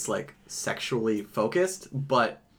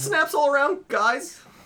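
very high-pitched voice; 4 dB louder than usual. Repeating another speaker's sign-off line: imitating Chris. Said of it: "that sounded more like Chris than before".

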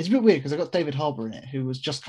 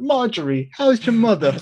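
put-on New York accent, higher, louder; 9 semitones higher, 8 dB louder than usual. Quoting a man finally allowed to sound like a proper New Yorker: New York accent. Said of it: "allowed to be proper New Yorker".

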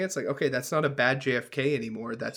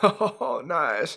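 put-on Southern politician voice, higher and louder; 3 semitones higher, 4 dB louder than usual. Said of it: "the bartender is gonna sound like Clinton".

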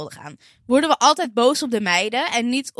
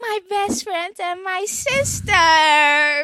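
ecstatic, high, very slow, "sister" stretched long; 8 semitones higher than usual. Retelling the same TV scene, now pleased: imitating Ross overjoyed. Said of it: "Wordt hij helemaal blij".

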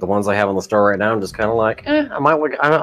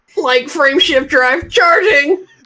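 very high, loud, yappy cartoon dog voice; 5 dB louder than usual. Asked to do a voice for the game, say it in Scooby-Doo voice. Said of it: "do the Scooby-Doo one, but say frameshift drive charging".

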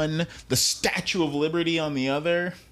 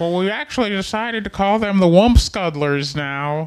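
loud filmmaker-style announcer voice, said out loud; 3 semitones higher, 5 dB louder than usual. Joking about a Star Wars naming decision: George Lucas impression. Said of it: "Is that what George Lucas sounds like?".

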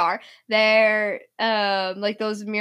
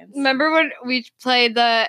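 normal talking voice

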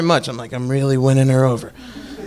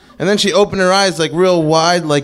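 usual speaking voice

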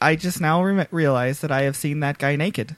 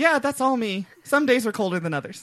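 amused, pitched-up, chuckling, laughed-through delivery; 9 semitones higher than usual. Retelling a guest's chuckling answer to the cousin: imitating a chuckling reply. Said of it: "he chuckles and says".

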